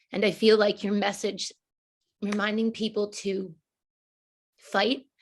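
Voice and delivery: a little emotional, choked-up, breaking mid-phrase. Interviewer honoring the guest's friend lost from the community, slightly choked up. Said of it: "I'm getting slightly choked up".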